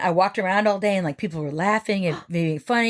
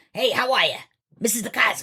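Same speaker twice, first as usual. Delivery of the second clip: rough, put-on voice. Retelling how an art teacher named DeCosmo talked: imitating teacher's rough voice. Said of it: "she talked like this".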